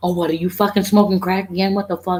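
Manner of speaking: put-on shouting. Retelling an argument with a neighbor: retelling own yelling. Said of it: "And I'm yelling and I'm going".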